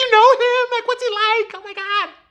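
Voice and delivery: put-on very high, starstruck, teeny-bopper fangirl gushing. Retelling how the receptionist reacted to a celebrity's girlfriend: imitating teeny-bopper girl going crazy. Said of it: "all fucking teeny bopper girl crazy".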